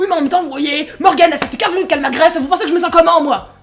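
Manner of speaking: put-on exaggerated, forced complaining voice. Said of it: "il a vraiment forcé".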